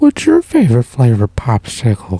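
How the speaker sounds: put-on loud, swooping, animated creepy old man voice. Checking which cartoon character the other speaker means, then doing the Family Guy creepy old man. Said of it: "You mean this guy?".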